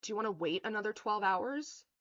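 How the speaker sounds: scornful, sneering retort. Retelling an er psych doctor's reply after asking for someone else: imitating a sneering doctor. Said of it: "she gives me this sneer".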